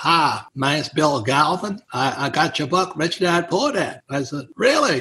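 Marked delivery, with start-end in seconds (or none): 0.0-4.0 put-on thick Dallas accent, spoken slower. Retelling a phone call from a reader of his book: Bill Galvin's thick Dallas accent. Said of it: "with a real thick Dallas accent".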